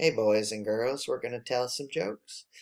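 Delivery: very quiet, hushed, low-energy deadpan. Imagining a low-energy joke show, the speaker does Mr. Rogers deadpan. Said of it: "Mr. Rogers deadpan".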